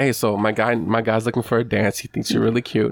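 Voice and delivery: normal talking voice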